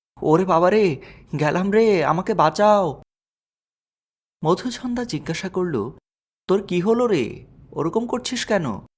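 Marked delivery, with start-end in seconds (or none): 0.2-2.9 wailing scream, much higher and louder. Narrating a story, a girl hears a sound above and cries out: wailing scream. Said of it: "হাউ মাউ করে চেঁচিয়ে উঠল".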